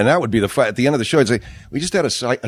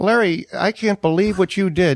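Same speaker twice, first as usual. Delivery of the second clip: put-on weepy, tearful crying voice, pitched high; 10 semitones higher than usual. Retelling a prank call to a radio guest, imitating own past crying. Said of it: "And I started to cry".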